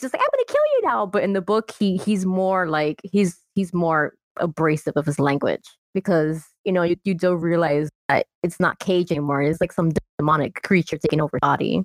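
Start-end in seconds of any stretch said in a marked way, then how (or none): 0.2-1.0 put-on tiny, childlike baby voice, very high. Retelling a movie line by the child Gage: imitating Gage's baby voice. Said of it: "little Cage with his baby voice".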